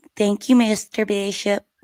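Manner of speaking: put-on old Hollywood starlet voice. Reading a requested audition line for a role: Marilyn Monroe voice. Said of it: "give me your best Marilyn Monroe voice".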